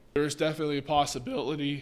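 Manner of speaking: voice cracking. A presenter explaining a theory to viewers, voice cracks. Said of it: "Oh, voice crack".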